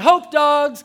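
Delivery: very loud, high, calling yell. Retelling handing out hot dogs and flyers, re-enacting his yelling. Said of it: "I'm yelling".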